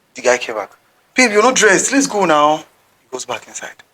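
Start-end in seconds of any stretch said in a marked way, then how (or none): 1.1-2.5 acted tone raised a notch higher. Retelling a guy urging his babe off her phone, with a raised tone. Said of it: "Do you know that the tone has gone up higher?".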